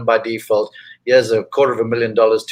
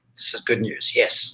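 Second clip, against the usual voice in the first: quieter muttering under the breath; 6 dB quieter than usual. Retelling a remark to mom while watching golf: imitating muttering under breath. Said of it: "under my breath".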